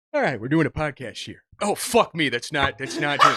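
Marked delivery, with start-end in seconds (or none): 0.2-1.5 put-on exasperated voice. Podcaster attempting a Patrick Warburton impression, mock-exasperated Patrick Warburton voice. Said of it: "You sounded so polite and exasperated".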